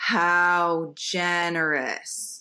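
put-on slow, steady, even delivery. Retelling what he said while rolling a joint: slow, steady delivery. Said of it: "in this really slow and steady way".

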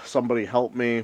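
yelled, shouted cry. Retelling a scene where a character runs away: imitating someone yelling for help. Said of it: "yelling for help".

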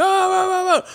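very high, cheerful, good-time party yelling.

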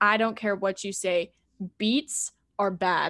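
put-on voice speaking dead seriously. Retelling what grandpa said during a visit: imitating grandpa speaking dead seriously. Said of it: "in all seriousness".

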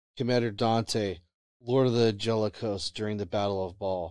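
plain

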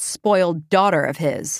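ordinary delivery

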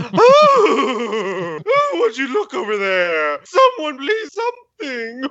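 put-on very high, very slow, swooping startled old-lady voice. Mocking another speaker's outburst: imitating an old woman who found a mouse. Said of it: "you sound like an old woman who found a".

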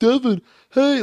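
high, loud, eager fan calling voice.

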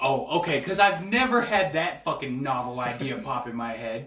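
loud, heavy, dripping sarcasm. Answering advice to get some allergy medicine: sarcastic. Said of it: "that was sarcastic".

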